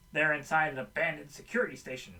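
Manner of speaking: ordinary talk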